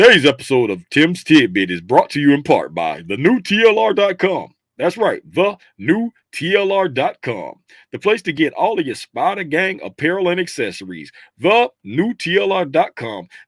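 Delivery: put-on sponsor ad-read announcer voice. Reading the episode's sponsor message for the new tlr.com, in a sponsorship voice. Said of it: "I got to put my sponsorship voice on".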